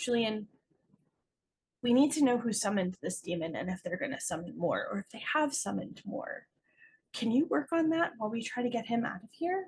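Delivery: hushed, private-sounding half-whisper. Playing a character who pulls another aside: half-whispering in character. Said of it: "So she's gonna whisper to him".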